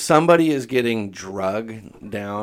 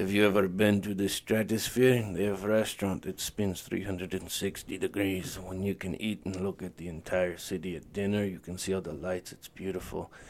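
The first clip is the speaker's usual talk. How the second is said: put-on soft, low, very raspy old-man voice; 8 dB quieter than usual. Retelling what a man told the group, imitating a raspy voice. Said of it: "he has a very raspy voice".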